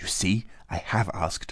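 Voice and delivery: hushed, under-the-breath whispered aside. A girl speaks to her little brother and another man, whispering. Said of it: "whispered Natásha".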